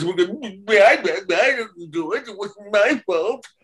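high-pitched, very slow stuttering. Recalling an early show and doing a second voice from it: Eggplant voice. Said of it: "and then Eggplant was".

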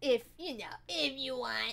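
odd creature voice, slug monster-like. Streamer offering to message Elle after stream, sounding like the slug monster from Monsters, Inc. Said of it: "Why did I sound like the slug monster".

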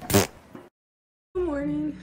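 soft, half-lost voice with swooping pitch. Greeting another speaker while partly losing voice: partly lost voice. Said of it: "I kinda lost my voice a little bit".

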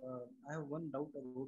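very soft, barely voiced, too quiet.

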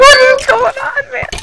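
very high, rushed, rattled-off panicked freak-out. Playing a game while being chased, freaking out. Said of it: "I'm freaking out!".

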